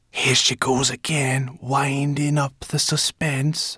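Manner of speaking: soft, hushed half-whisper. A narrator reads one character's aside into the dragon's ear, half-whispering. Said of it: "Sorrel whispered into Firedrake's ear".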